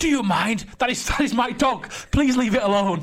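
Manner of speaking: high, indignant, offended, outraged tone. Retelling a woman on a train telling fans to leave her dog: imitating an outraged woman. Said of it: "And she was so outraged".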